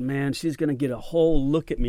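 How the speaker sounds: ordinary talk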